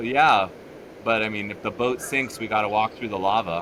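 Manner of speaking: normal talking voice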